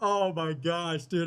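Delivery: laughing hard while speaking. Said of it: "I'm literally crying".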